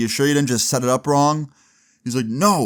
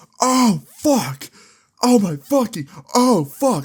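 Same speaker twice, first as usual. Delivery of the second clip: very high, slow, drawn-out pained wailing; 10 semitones higher, 3 dB louder than usual. Retelling a neighbor's fall off a ladder: imitating a neighbor screaming in pain. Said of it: "he just starts screaming".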